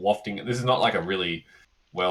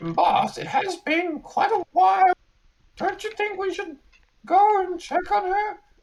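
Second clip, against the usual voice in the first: very high-pitched put-on minion voice. Retelling a conversation heard in church, doing the high voice: high voice. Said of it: "The high voice says".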